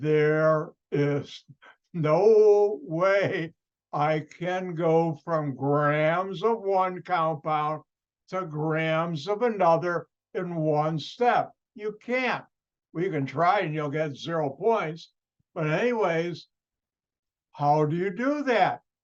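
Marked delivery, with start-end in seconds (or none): 0.0-11.5 slow-motion delivery, very slow and drawn out. Repeating the previous sentence for listeners: said in slow motion. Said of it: "I'll say that in slow motion".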